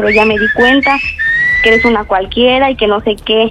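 ordinary delivery

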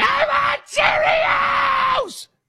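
put-on high, slow, whining toddler tantrum yell.

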